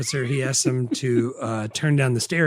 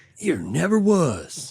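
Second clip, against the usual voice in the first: put-on mild country accent; 4 semitones higher than usual. Quoting a coach's insult: imitating Lane Smith's country accent. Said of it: "just the right amount of country in his accent".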